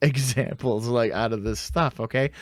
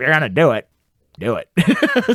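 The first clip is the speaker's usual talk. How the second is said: put-on loud, drawn-out, slow, swooping old-lady voice; 2 semitones higher, 5 dB louder than usual. Retelling what a wrestler said while being power bombed: Mae Young impression. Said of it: "Is that your Mae Young impression?".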